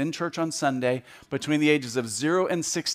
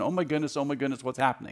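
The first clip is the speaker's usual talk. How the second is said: put-on anxious, hand-wringing worried fretting; 4 dB quieter than usual. Speaking to an audience, acting out a fretting God in heaven: imitating fretful worry. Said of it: "wringing his hands going".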